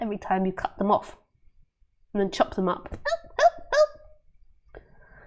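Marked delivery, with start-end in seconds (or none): 2.9-4.8 little, squeaky, very high tiny voice. Acting out lettuces as they are chopped up, in a tiny squeaky voice. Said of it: "They have little tiny squeaky voices".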